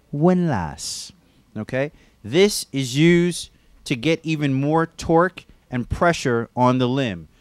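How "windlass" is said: put-on English accent on the one word. Naming a favorite new word for part of the belt, in an english accent. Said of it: "I like to use an English accent when I say it".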